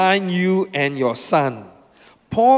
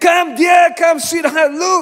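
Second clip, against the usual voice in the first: imitated shouting, higher and louder; 11 semitones higher, 4 dB louder than usual. Retelling finding the watch and calling loved ones over: retelling own shout. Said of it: "I started shouting".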